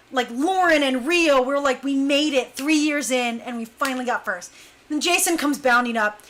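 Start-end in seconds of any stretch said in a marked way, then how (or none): none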